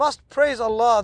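normal talking voice

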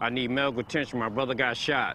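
usual speaking voice

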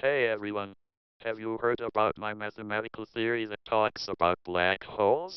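robotic computer voice, slightly quick delivery. Trying out synthetic voices, the speaker pretends to be Stephen Hawking, robotic. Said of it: "that one's kind of more robotic".

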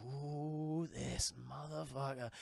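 low, soft, gruff, menacing voice.

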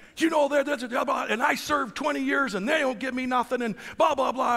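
angry, complaining rant, high, loud and shouted.

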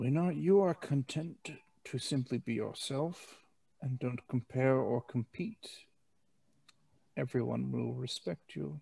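weary, worn-out, tired soft voice. A game narrator voices Cup speaking as the group walks, tired voice. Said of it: "Cup says in a tired voice".

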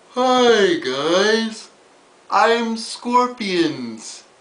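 dumb-sounding, high-pitched, very slow, drawn-out dopey voice. Voicing a clawed creature introducing itself: silly Scorpions voice. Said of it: "You'll notice that I used a stupid sounding voice".

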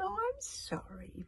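very high, purring voice. Narrator reads the witch answering Kamikaze's cry, purring. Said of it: "purred the witch".

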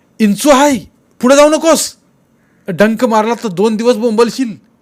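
involuntary blurting out. Biru spots a scorpion under Kasturi's stone and exclaims involuntarily. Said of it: "तो अभावितपणे उद्गारला".

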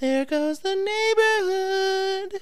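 put-on little kid voice, pitched way up. Recapping a scene, voicing a character's line in a child's voice. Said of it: "says in a child's voice".

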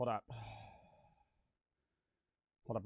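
out of breath. Talking to chat as a call comes in, out of breath. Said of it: "I'm out of breath".

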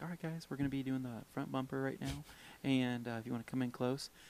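very quiet, hushed, soft-spoken delivery. Retelling how an instructor named Justin spoke to the group: imitating a soft-spoken Justin. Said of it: "'cause Justin's very soft-spoken".

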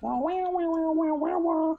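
high mock wah-wah baby crying, wailing.

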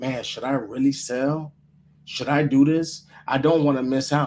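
normal talking voice

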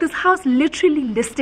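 ordinary talk, nothing marked

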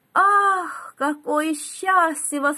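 high, delighted, joyful outcry. A student opens his window and looks into the garden: exclamation. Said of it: "воскликнул он".

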